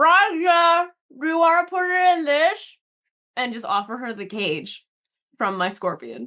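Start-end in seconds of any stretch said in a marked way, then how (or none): 0.0-2.8 speaking with mouth full, higher pitch. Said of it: "and as I'm chewing, I'm gonna go".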